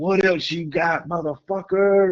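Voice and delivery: screaming at the top of the lungs, very high, raw. Recalling being out on a hotel balcony before getting clean, retelling a scream. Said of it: "I was out there on the balcony just screaming".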